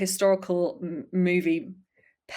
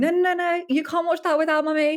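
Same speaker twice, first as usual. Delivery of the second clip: very high, loud, frantic, motherly voice; 11 semitones higher, 5 dB louder than usual. Retelling a childhood video where a mother objects: imitating a frantic mother. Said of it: "very frantically saying".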